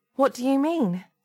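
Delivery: slightly trembling voice. A woman, taken out into the hall, asks what he means, a little shaky. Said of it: "her voice a little shaky".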